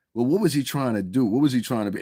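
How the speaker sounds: usual speaking voice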